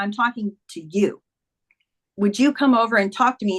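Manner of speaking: normal talking voice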